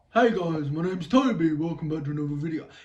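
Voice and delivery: put-on utterly uninteresting droning monotone, flat and dull. Redoing his video intro to show how boring it is, in the most uninteresting monotone. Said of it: "the most uninteresting monotone voice".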